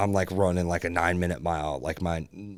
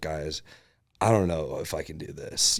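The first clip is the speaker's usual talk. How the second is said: put-on crying, tearful voice; 2 semitones lower than usual. Retelling talking to the camera in the van at mile sixty: imitating own past crying. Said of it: "crying, you know, I'm, like, broken".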